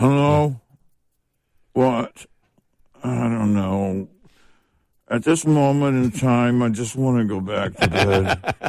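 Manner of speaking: slow, sleepy, unenunciated groggy half-awake mumble. Imitating how she sounds when called, imitating someone half awake. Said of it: "someone who's like half awake when you call them".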